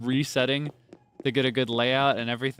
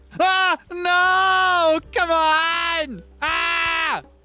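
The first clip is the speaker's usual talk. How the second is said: anxious, higher and louder; 7 dB louder than usual. Trying to catch a fish in a game: nervous. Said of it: "I'm nervous".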